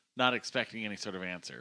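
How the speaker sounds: ordinary talk, nothing marked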